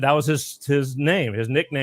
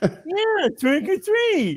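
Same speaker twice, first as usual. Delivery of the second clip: put-on speech impediment, much higher. Telling a story, a man voices a trick-or-treating boy, imitating cleft palate speech. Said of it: "he kind of talked like this".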